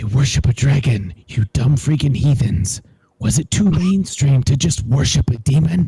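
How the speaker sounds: breathy, taunting stage whisper. Casting a spell, whispering a taunt into a kobold's ear: whispering in his ear. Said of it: "I'm gonna whisper in his ear".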